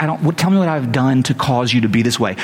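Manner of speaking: usual speaking voice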